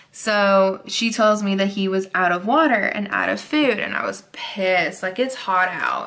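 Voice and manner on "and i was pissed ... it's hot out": ordinary talk, nothing marked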